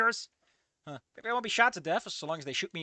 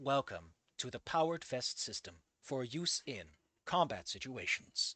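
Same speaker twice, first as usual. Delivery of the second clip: low, slow, robotic baritone announcement voice; 4 semitones lower, 6 dB quieter than usual. A powered vest suddenly speaks to its panicking wearer, robot baritone voice. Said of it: "A sudden robot baritone voice echoes out".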